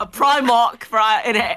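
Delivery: put-on, imitated British accent. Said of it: "your British accent's amazing though".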